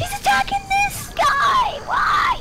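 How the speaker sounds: very high, alarmed shout.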